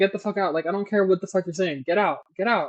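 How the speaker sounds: put-on livid, furious anger. Speaker retells a man ordering a woman out of his penthouse, acting out livid anger. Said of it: "He's livid".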